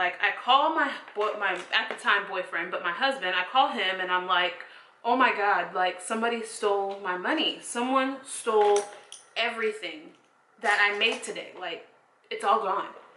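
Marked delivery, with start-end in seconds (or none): none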